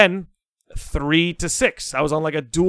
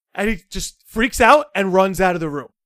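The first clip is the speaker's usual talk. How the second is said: normal talking voice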